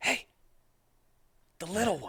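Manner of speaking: very high, loud, carrying stage whisper. Sneaking up on sleeping figures in a game, a loud whisper. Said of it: "I'm gonna whisper, but loudly".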